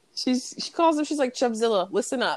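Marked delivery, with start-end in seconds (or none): none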